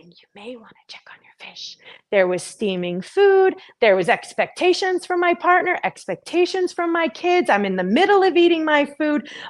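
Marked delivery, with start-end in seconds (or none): 0.2-1.8 soft, hushed, very quiet whisper. Retelling a quiet inner voice about the fish: imitating a whisper.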